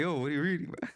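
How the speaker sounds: put-on annoying, pesky little-kid voice. Speaker quoting an annoying little kid's question: imitating an annoying little kid. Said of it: "Little annoying ass jit talking".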